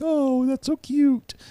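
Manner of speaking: put-on cooing baby talk, very high and slow. Showing the voice people use when talking to kids, baby voice. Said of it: "people have their like their baby voice when they're talking to kids".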